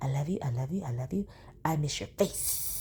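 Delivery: effusive, doting delivery. Reading out text messages, imitating how Sonya says it. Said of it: "Y'all know how she said it".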